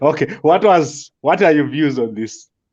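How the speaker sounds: giggly, laughing through the words. Asking another speaker for their views, laughing while talking. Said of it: "I can't stop laughing".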